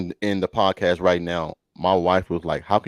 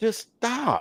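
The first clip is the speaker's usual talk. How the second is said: put-on screaming, higher; 4 dB quieter than usual. Retelling screaming at the tv about receivers: imitating screaming at the tv. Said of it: "screaming at T V like".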